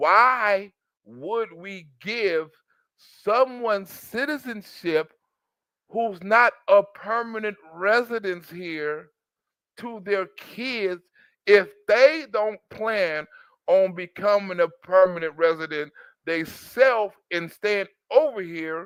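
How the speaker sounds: slow, deliberate, emphatic delivery. Speaker stresses a point about citizenship for those who don't get it, saying it slowly. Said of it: "let me say it a little slow".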